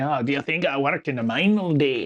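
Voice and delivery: stock put-on dwarf voice, Scottish brogue. Joking about how a stereotyped dwarf would talk: scottish accent. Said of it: "Scottish accent".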